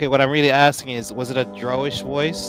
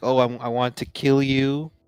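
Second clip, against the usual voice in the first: acted menacing, threatening voice. Asking the game master how a voice sounded: acting out a menacing voice. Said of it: "did it say "this way" like".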